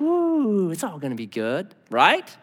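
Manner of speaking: falsely sweet, honeyed, angelic voice. Showing how a demon really comes in: deceitful angelic voice. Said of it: "They come with that deceitful, angelic voice".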